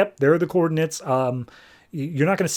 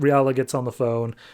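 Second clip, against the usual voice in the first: ordinary talk, nothing marked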